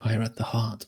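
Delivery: whispered delivery. Voicing a character's advice to another player: Victor whispering. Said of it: "Is what Victor whi-, whispers to you".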